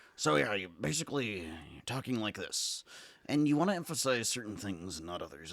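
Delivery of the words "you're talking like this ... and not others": rough, gravelly fake voice. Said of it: "sounds more like Hunter S. Thompson because it's so gravelly".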